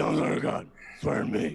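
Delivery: put-on growling voice. Retelling how a man said it to the speaker, imitating a growling voice. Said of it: "there was a growl to it".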